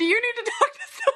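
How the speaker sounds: very high voice through laughter, acted out. Retelling the reply to someone's dark joke: imitating laughing while talking. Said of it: "saying it while I'm laughing".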